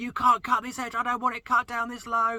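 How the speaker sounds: very high, frustrated, shrieking scream. Recounting a hedge-cutting job, the speaker imitates the customer screaming at them: imitating someone screaming. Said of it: "she was screaming".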